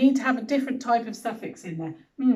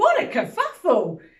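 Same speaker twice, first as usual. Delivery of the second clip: proper-sounding, high-pitched exclaiming voice; 7 semitones higher than usual. Showing how a story line tagged 'exclaimed Sam' is said, exclaimed. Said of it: "I put exclaimed, and that means saying it like this".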